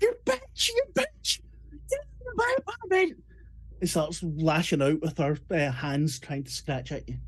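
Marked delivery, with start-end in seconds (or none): 0.0-3.2 raging, very high, shrill, furious screaming. Narrating a scene, voicing a woman who sprayed herself in the eyes: furious screaming. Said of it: "She starts screaming".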